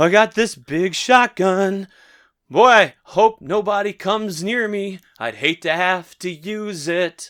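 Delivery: high, loud, trembling, quavering, shaky voice. Acting out what a man in the scene says, in a mock-shaky voice. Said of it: "it's like shaky voice".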